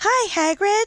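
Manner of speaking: put-on very high-pitched, loud, girly voice. Retelling how an audiobook narrator voices Hermione: Hermione girl voice. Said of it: "with the girl voice".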